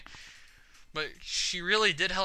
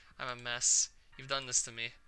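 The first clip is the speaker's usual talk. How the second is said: ordinary talk, nothing marked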